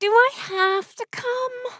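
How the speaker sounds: incredibly whiny, very high, drawn-out whine. Narrator reads a best friend's reply when called, in an incredibly whiny voice. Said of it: "in an incredibly whiny voice".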